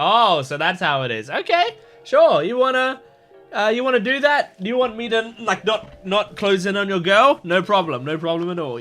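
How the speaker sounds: put-on chuckling, relaxed tone. Retelling a recruiting conversation, imitating Lancer laughing while talking. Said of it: "Lancer was just laughing and going".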